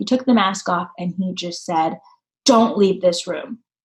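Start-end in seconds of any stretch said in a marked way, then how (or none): 2.5-3.6 put-on raised voice. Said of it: "he raised his voice".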